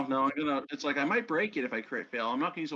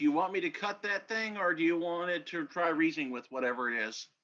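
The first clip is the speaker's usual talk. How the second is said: plain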